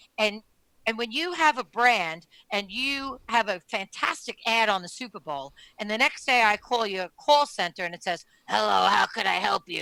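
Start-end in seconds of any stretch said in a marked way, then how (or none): 8.5-9.8 put-on chain-smoker voice. Imitating a brand's call center answering the phone, chain-smoker voice. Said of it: "it sounds like a chain smoker".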